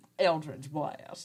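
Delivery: American southern accent. Naming a game spell in passing: southern accent. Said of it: "which I can't say without a southern accent".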